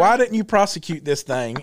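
ordinary talk, nothing marked

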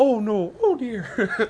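poor cartoon bear voice, pitch swooping upward. Mid-conversation, the speaker attempts a bad Winnie the Pooh voice. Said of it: "I can't do a Winnie the Pooh voice".

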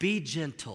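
soft, hushed half-whisper. Retelling what an aunt half-whispered at the wedding reception: imitating a half-whisper. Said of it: "she whispers something to me".

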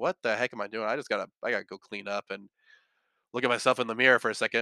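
ordinary talk

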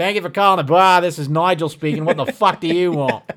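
put-on Australian accent, loud, high, belted out. Answering the phone, the speaker retells his put-on Australian voice as Nigel. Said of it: "I answered the phone with just an Australian voice".

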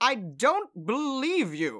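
high, swooping, drawn-out yell in character. Voicing a boy advancing with his wand outstretched: yelling in character.

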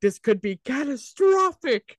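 mock shrill, overblown comedic yell, very high. Retelling a line from a movie trailer: imitating Will Ferrell yelling. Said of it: "he's in the office and he yelled".

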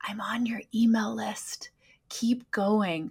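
put-on, imitated whisper. Retelling what a woman said after a yoga class: imitating a whisper. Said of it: "she whispers to me".

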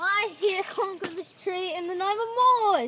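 strange, high-pitched, fake Scottish accent. Claiming a tree while climbing it: weird put-on scottish accent. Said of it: "He's doing a weird Scottish accent".

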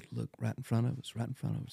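whispered, very soft, barely audible. Retelling how a wife quietly pointed out a bobcat nearby: imitating a whisper. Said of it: "she whispered to me".

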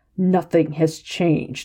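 growled, rough growling voice. The scarred man answers a question, growling. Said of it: "the scarred man growled".

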